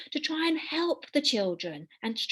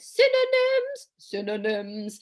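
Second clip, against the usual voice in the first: put-on hoity-toity posh pronunciation; 3 semitones lower, 3 dB louder than usual. Presenting a lesson and introducing a new word, saying it in a posh voice. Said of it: "posh voice for a posh".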